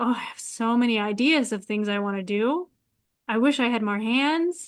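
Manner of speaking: usual speaking voice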